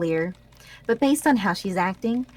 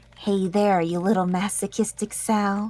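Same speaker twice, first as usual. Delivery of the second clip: whispering. Reading a story line whispered directly into her ear: whispering. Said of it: "I whispered directly into her ear".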